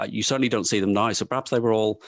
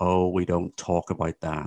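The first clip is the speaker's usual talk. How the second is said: put-on Liverpudlian accent; 3 semitones lower than usual. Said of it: "Ringo just said in a Liverpudlian accent".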